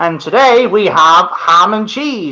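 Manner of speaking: mock school PA announcer voice. Asking a former school PA announcer what it was like, imitating a school announcer. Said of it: "Is it one of them where he goes".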